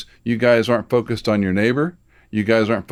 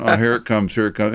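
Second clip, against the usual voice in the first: plain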